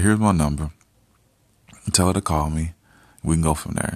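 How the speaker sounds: ordinary talk, nothing marked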